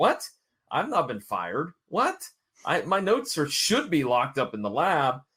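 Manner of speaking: put-on confusion, swooping, baffled, innocent. Retelling how Tim answers Ben: imitating Tim playing dumb. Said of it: "Tim plays completely dumb".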